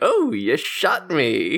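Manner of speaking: thrilled, very slow, savoring, drawn-out swooping pitch. Retelling an anime scene where he gets shot: imitating psyched Uvogin. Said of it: "he's really psyched about it".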